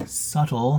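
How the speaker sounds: the word "subtle" stressed. A video host explains her plan to viewers, stressing the word subtle. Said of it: "I'm going to emphasize the word subtle".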